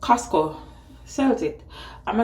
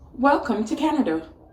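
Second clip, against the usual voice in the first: pleasant, friendly sat-nav announcement voice; 5 semitones higher, 3 dB louder than usual. Retelling what the GPS announced at the border: nice Google voice. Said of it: "Google said in her nice voice".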